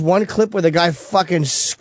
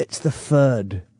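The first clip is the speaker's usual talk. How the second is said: fake Cockney accent, lower and quieter; 5 semitones lower, 5 dB quieter than usual. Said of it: "That's that fucking Cockney shit".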